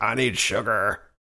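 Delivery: alien voice faking human speech.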